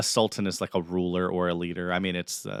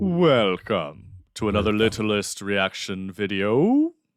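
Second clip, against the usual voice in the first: put-on announcer voice, louder; 5 dB louder than usual. Opening a reaction video: announcer guy voice. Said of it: "I was trying to go, like, announcer guy".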